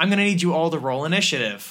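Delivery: ordinary talk, nothing marked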